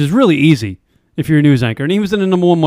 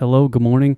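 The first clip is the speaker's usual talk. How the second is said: put-on newscaster voice, whispered; 3 semitones lower than usual. Describing a morning show anchor who whispers: Ann Curry whisper. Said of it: "The lady that whispers and says".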